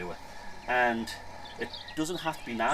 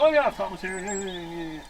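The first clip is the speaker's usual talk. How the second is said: very slow, high, classic radio presenter voice; 7 semitones higher, 7 dB louder than usual. Imitating the producer who called with an invitation to come on: Thomas's classic radio voice. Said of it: "radio voice, you know, classic radio voice".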